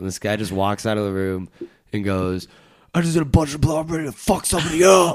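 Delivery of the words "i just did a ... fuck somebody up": high-pitched scream, dramatic like a movie line. Retelling how a frat party guy came out of a room: imitating a scream. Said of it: "he screams it like it was a".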